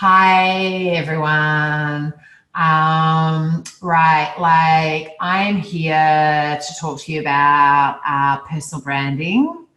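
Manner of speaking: heavy vocal fry. Explaining a speech trend, the speaker demonstrates vocal fry. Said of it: "you fry out the words".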